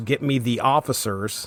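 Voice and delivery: ordinary talk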